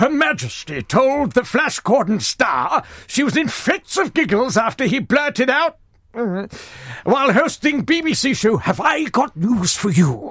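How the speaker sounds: slow, booming impression. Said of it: "I won't carry on like that".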